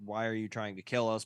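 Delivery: normal talking voice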